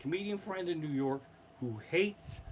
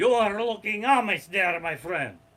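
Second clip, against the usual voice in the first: put-on loud, booming, high-pitched Russian accent; 5 semitones higher, 10 dB louder than usual. Retelling what a cab driver said to them on the way to a show, Russian cab driver impression. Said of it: "we had a run of getting Russian cab drivers".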